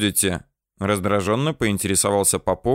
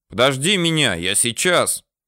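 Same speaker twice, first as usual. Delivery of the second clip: loud shouted call, higher pitch; 4 semitones higher than usual. The narrator calls after the departing Komsomol organizer, shouting after someone. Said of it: "крикнул я в спину удаляющемуся комсоргу".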